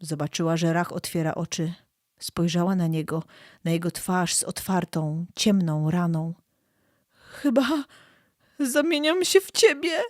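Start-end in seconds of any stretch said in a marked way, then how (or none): 7.1-10.0 very high, frightened, terrified voice. Narrator reads a woman looking at a wounded man, terrified. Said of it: "powiedziała przerażona".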